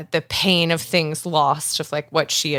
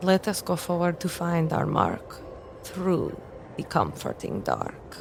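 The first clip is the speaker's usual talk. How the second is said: soft, hushed whisper with a secretive tone; 2 semitones higher, 6 dB quieter than usual. Voicing a character speaking a charm into truth: whisper. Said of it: "Azora is going to whisper".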